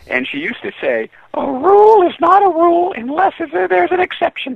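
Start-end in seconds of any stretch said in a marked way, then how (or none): 1.3-4.5 very high-pitched, loud, greedy-sounding voice. Quoting her saying about rules, in Miss Kramer's high-pitched voice. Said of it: "Just like that, that greedy, high-pitched voice".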